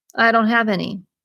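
usual speaking voice

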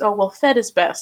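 put-on patronizing, talking-down, belittling tone. Imitating what people say to a mom who formula feeds: imitating a condescending tone. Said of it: "That's so fucking condescending".

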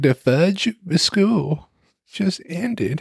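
put-on childish cartoon-kid voice, high, slow, drawn-out. Retelling own childhood reaction to summer ending: childhood Eric Cartman voice. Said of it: "That's what I sounded like as a child".

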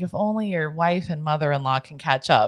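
quiet, hushed, muttered under the breath. Retelling what an uncle said quietly to himself: imitating a muttered aside. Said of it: "a little under his breath".

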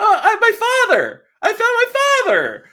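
mocking, very high head voice.

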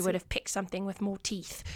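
put-on British accent. Quoting what he said, trying the accent on the spot: British accent. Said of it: "Could I do a British accent right now?".

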